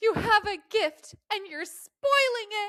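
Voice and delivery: shrill, very high-pitched, very loud voice. Retelling what their mother said leaving the room, imitating my mother. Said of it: "I was like mimicking my mother".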